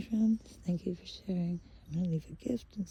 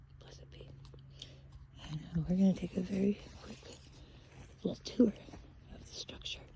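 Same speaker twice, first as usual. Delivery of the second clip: soft, hushed whisper under the breath; 8 dB quieter than usual. Speaker asks permission, then starts showing viewers a quick tour, whispering. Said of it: "I don't know why I'm whispering".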